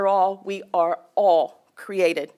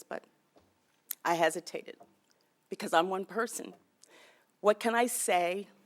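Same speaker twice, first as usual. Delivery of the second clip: soft, halting, emotional voice catching and breaking; 9 dB quieter than usual. Speaking at a public event after the mayor's introduction, getting very emotional. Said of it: "I'm getting very emotional about this".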